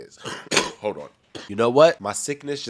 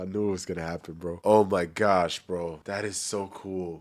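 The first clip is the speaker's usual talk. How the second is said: tearful voice, crying through the words; 3 semitones lower, 3 dB quieter than usual. Reacting to a player signing a one-day contract, crying while talking. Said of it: "I'm sorry for crying".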